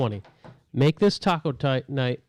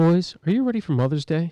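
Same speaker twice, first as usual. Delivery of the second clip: radio announcer, public-radio host voice; 4 semitones higher than usual. Host starting the episode's sponsor read, doing an NPR voice. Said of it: "This is my N P R voice".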